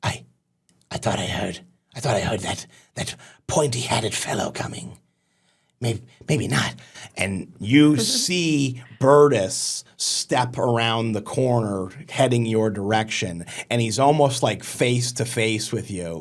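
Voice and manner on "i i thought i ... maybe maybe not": fast, hushed goblin creature chatter, rattled off. Narrating to the players, voice a goblin heard speaking the Goblin language: goblin voice. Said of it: "You hear in like the Goblin language say".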